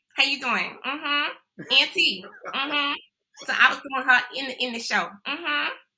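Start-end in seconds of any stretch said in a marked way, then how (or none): 0.2-3.0 put-on straight Brooklyn accent. The speaker imitates their niece, as done in the show; imitating niece's Brooklyn accent. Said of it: "she talks straight up from Brooklyn".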